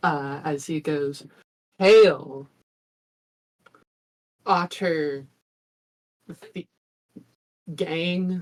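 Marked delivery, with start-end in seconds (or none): 1.8-8.4 huge, booming, thundering loud voice. A storyteller voices Dennis hailing the otters from the boat, Dennis's booming voice. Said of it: "his voice suddenly just booms like multitudes louder".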